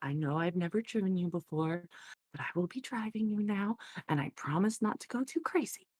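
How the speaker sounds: gentle, compassionate, reassuring, very low voice. Voicing a character talking to a horse she will drive: very low, compassionate voice. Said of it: "in a very low, kind of compassionate voice".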